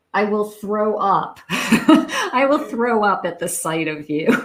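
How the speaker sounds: speech bubbling with giggles. Quoting a line while still laughing to yourself: laughing while talking. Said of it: "So I'm still laughing".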